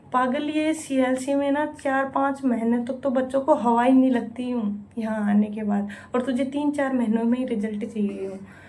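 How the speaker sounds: normal talking voice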